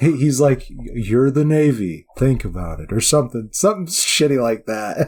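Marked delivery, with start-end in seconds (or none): 0.7-2.9 imitated slow talking. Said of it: "And he talks so slow".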